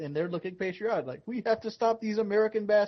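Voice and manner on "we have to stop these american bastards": put-on Indian accent, pitched up. Acting out what people there think of Americans: Apu voice. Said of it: "I said he sounded like Apu".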